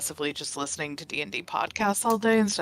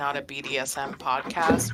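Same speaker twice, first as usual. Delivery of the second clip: ordinary delivery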